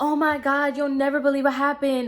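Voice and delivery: acted, high, frantic, upset sobbing. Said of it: "she's, like, frantically crying".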